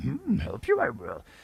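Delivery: well-practised character voice, slow, deliberate and drawn out. Showing a practised impression: Yoda impression. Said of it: "I practice that".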